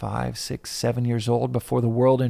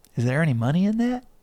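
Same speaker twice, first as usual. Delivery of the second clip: put-on Texas accent with voice pitched higher; 5 semitones higher than usual. Speaker quotes their dad's question about making music, imitating dad's texas accent. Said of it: "with his Texas accent".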